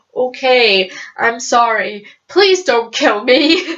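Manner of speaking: mock-frightened, very slow, backing-down pleading. Retelling how Valentine reacts when Sebastian loses his temper: imitating scared Valentine. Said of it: "Valentine is clearly scared of him".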